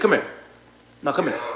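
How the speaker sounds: hushed, breathy whisper. Retelling how his mama would call him over: imitating his mama.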